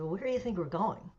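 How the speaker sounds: ordinary delivery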